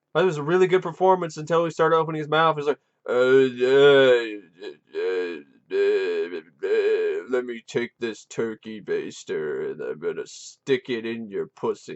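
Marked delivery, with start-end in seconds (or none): 3.1-12.0 each uh drawn out, deep and slow. Mocking how the actor playing the blind man sounded, Frankenstein monster voice. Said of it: "started sounding like the Frankenstein monster".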